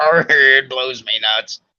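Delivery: slow, drawn-out pirate voice with "arr". Repeating the other speaker's phrase again to tease him, in a pirate voice.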